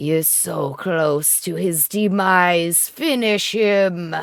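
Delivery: close, whispered sword character voice. A game master voices a sword whispering to a player's character, whispering sword voice. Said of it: "The sword whispers in your ear".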